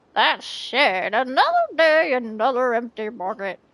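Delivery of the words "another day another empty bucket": shaky, terrible put-on old man voice. Speaker voicing an old man out fishing, bad old man voice. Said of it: "My old man voice is terrible".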